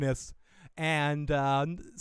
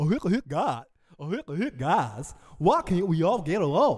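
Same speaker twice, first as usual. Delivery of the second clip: slow drawling cartoon voice with swooping pitch. Acting out a cartoon character joining a joke fight: Goofy voice. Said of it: "Goofy showed up in the fight".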